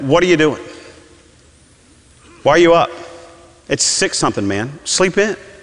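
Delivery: play-acted irritated, annoyed tone, pitched high. Retelling being interrupted early by a child: imitating own past gruff question. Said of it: "I said it like that".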